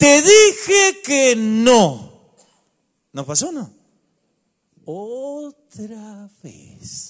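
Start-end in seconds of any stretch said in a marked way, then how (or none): 0.0-2.2 impatient, very loud, slow, every word hammered. Showing how words sound when patience is lost: slow, heavily stressed, loud. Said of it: "Lentas, acentuadas y fuertes".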